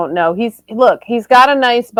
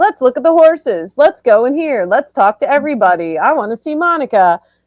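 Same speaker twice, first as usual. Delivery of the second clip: put-on thrilled, can't-wait, excited, eager enthusiasm; 3 semitones higher than usual. Recapping a show, the speaker acts out Scout at camp: imitating excited Scout. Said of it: "she was so excited to be there".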